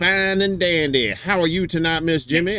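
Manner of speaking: cartoon rooster character voice. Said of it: "I'm talking like I'm Foghorn Leghorn".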